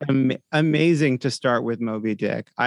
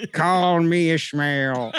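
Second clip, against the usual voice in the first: put-on thick, terrible, laid-on pirate accent; 3 semitones higher than usual. Imitating an audiobook reading of Moby Dick: Burt Reynolds thick sailor's accent. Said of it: "thick and quite terrible sailor's accent, like a pirate".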